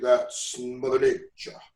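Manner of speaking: put-on genuine, low-pitched Caribbean accent. Recalling an old commercial, the speaker quotes the man from it in a real caribbean accent. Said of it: "he had that that real Caribbean accent".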